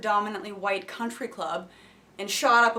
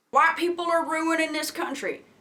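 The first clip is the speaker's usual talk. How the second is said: pitched-up, put-on Southern accent; 7 semitones higher than usual.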